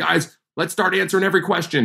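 high, rally-like, called-out mock scream. Retelling running in to get the team's buy-in: imitating own screaming. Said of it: "just screaming".

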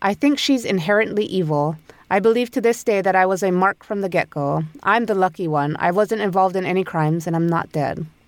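normal talking voice

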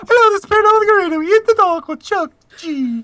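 high loud puppet-like voice. Mimic people on a show you find adorable, greeting listeners in an unconvincing Muppet voice. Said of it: "You need to work on your Muppet voice".

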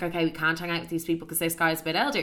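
ordinary delivery

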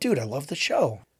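usual speaking voice

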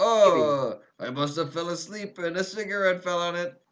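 put-on speaking with a French accent. Acting out a man's excuse, in a French accent. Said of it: "I don't know why he's French suddenly".

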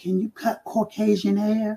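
hushed half-whisper under the breath. Retelling a question from an interviewer: imitating a half-whisper. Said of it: "he kinda whispered".

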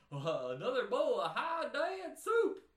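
very loud, very slow, swooping-pitch cartoon dad voice. Attempting a line from the Goofy movie, in a Goofy voice. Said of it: "I can kind of do that thing from the Goofy movie where he goes".

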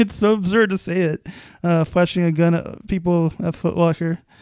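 amused, holding back a chuckle, laughter in voice. Speaker discussing the latest reported incident involving a man, amused. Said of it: "you probably hear this in my voice".

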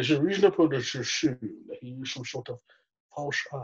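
wild, full-on exaggerated Scottish accent. Showing a Sean Connery impression from Never Say Never Again. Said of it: "I could do this Sean Connery".

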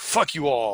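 grumbling, griping, grumpy cursing tone. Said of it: "That's me doing imitation of".

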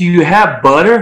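put-on American accent. Asking for butter so people can understand, in an American accent. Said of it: "you'd say it in an American way".

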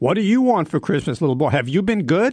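mock big, very loud, scary voice. Retelling how Santa Claus talks to a little boy, in a very loud Santa Claus voice. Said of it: "very loud voice".

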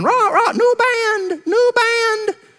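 squawking parrot voice, very high, very slow, drawn-out. Telling a story about an old parrot in a church: squawking parrot voice. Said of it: "That old parrot started squawking".

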